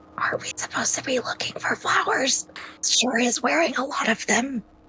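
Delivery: hushed, breathy whispered aside. Speaker retells what they whispered to Gedrick, whispering. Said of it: "I whisper the same thing and I say".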